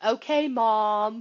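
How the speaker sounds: put-on sarcastic tone. Retelling what the bandmates say back to her: imitating a sarcastic reply. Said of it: "I'll get the sarcastic of".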